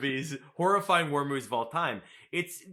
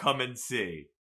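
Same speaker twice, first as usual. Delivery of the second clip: ordinary talk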